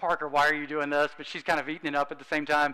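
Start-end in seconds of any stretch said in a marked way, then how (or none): 0.0-1.1 imitated embarrassed voice. Retelling a surprise proposal, imitating someone embarrassed. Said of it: "so embarrassed".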